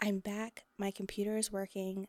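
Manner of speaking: hushed whisper. Talking to viewers, not wanting the computer to hear, whispering. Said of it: "I'm whispering because I don't want her to hear me".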